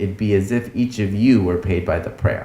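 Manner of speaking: ordinary talk, nothing marked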